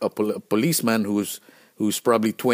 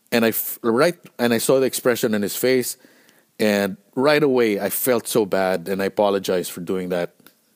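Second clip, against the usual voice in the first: ordinary talk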